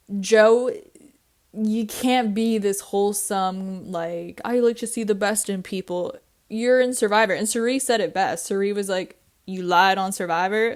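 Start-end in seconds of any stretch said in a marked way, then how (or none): 9.4-10.7 mock sarcastic delivery. Speaker quotes a Survivor player's jab at Joe, mimicking Cirie's sarcasm. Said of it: "like with her sarcastic tone".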